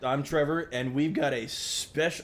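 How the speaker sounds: slow voice, cracking mid-phrase. Podcast co-host introducing himself to listeners, voice cracking. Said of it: "voice crack!".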